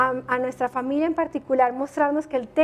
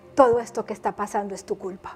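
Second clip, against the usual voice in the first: low, ironic, sarcastic tone; 5 semitones lower than usual. Speaker retells what someone told them with a smile: retelling a sarcastic, ironic remark. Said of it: "con cara de sarcasmo y ironía me dice".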